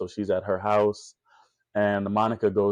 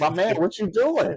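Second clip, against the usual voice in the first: put-on very high, fed-up, exasperated yell; 11 semitones higher, 3 dB louder than usual. Recapping a show, acting out a moviegoer at a character: mock yelling at the screen.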